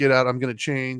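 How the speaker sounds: usual speaking voice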